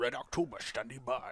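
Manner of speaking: very quiet, low, dropped, murmured delivery. Wrapping up an episode, the speaker does a Sean Connery impression. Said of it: "Sean Connery, huh?".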